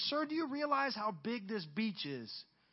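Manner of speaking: mock derisive, scoffing, talking-down tone. Retelling a story about a man throwing starfish back: imitating a mocking tone. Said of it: "mockingly said".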